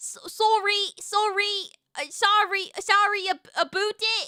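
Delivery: put-on Canadian accent, pitched high. Answering a request to do a Canadian accent: Canadian accent. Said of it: "Can you do a Canadian accent?".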